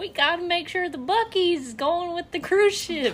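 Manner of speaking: put-on Southern accent. Retelling what others told Grandma before a cruise, in a put-on southern accent. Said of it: "I don't know why I'm doing a southern accent".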